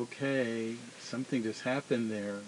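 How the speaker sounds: normal talking voice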